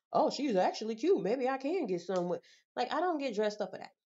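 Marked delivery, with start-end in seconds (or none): none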